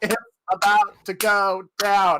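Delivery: very slow delivery, each word dragged out. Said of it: "Cardi B".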